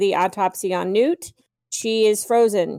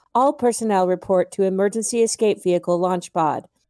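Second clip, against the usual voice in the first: mock robotic computer announcement voice. Quoting the ship's computer from the film: imitating a robotic computer voice. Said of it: "it's a nice robotic voice".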